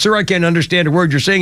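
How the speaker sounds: ordinary talk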